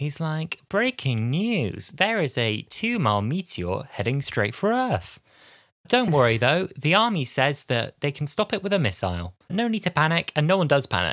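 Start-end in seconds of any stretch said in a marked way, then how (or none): 0.7-10.3 extremely cheerful, chirpy, upbeat, sing-song newsreader delivery. Retelling a newsreader announcing a meteor heading for earth: imitating an extremely cheerful newsreader. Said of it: "The newsreader in this is extremely cheerful".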